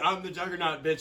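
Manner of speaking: normal talking voice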